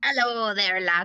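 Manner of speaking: put-on slipped into an Irish accent. Voicing a character greeting two men at a bar, accidental irish accent. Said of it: "that went Irish".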